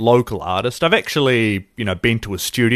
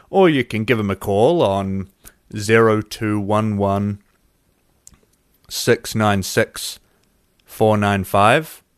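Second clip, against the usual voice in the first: slow, deliberate delivery, each word spaced out carefully; 3 semitones lower than usual. Giving listeners a tattoo studio's phone number, speaking slow and deliberate. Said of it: "I was saying that slowly".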